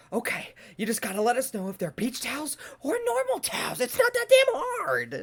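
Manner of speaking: exasperated scream, very high, rising and swooping. Recounting losing her mind at people, reenacting her own screaming. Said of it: "I started screaming".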